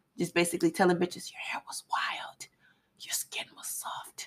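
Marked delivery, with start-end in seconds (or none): 1.3-4.3 mock sultry ASMR voice, quieter. Imitating storytellers on a download app: imitating a sexy ASMR voice. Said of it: "in their A S M R voices and talking real sexy".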